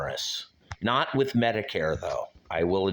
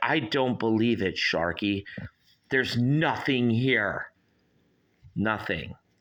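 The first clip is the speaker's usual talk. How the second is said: voice of a pet, inner-monologue style; 4 semitones higher than usual. Speaking for a pet called Ghost who asks for coffee: voicing a pet's thoughts. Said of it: "and he's like".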